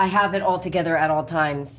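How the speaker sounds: plain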